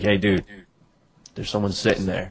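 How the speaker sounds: usual speaking voice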